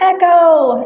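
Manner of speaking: loud, high call carried over a distance.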